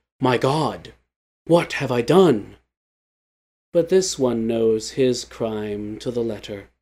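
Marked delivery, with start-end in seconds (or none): 0.2-2.6 stunned, shocked man's exclamation. Narrator voicing what most men would ask, shocked man voice. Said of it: "in that shocked man voice".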